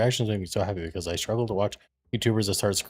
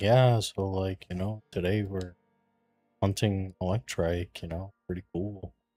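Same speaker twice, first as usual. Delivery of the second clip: flat, bored monotone with no energy; 3 dB quieter than usual. Showing how a dull YouTube intro would sound: unexcited flat delivery. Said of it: "I don't wanna just be like".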